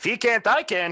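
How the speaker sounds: very high, small halfling man voice. Voicing a halfling man who speaks up from behind the party: halfling man character voice. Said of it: "a small halfling man".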